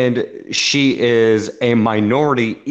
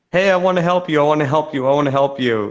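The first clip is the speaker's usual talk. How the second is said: fake, put-on Middle Eastern accent; 3 semitones higher than usual. Retelling what a woman on a stream kept saying: imitating a put-on Middle Eastern accent. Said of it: "trying to speak in an air, in, like, a, a Middle Eastern accent".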